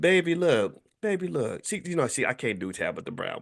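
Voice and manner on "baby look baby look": put-on sweet, high, slow, unhurried baby voice. Quoting an Instagram statement, doing Tabitha Brown's sweet baby voice. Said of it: "in her sweet baby voice".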